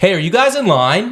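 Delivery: very high, loud, called-out yell. Retelling yelling out of a car window at a line: imitating own yell. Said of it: "and I yell".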